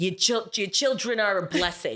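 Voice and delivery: put-on heavy, laid-on New York accent. Imitating a Sicilian construction dude who mispronounces words, use a put-on thick New York accent. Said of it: "the biggest ac like, New York accent".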